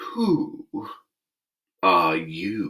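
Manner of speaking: drowsy, listless, languid, sleepy voice. The caterpillar takes the hookah from its mouth and addresses Alice, languid and sleepy. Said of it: "addressed her in a languid, sleepy voice".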